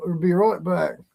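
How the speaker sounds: put-on best-effort Australian accent. Asked to try an accent, doing a best attempt: australian accent. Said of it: "Let me do my, my best accent. ... It's more Australian".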